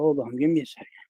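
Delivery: out of breath, breathless. Pausing a story to catch breath, out of breath. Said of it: "I'm all out of breath now".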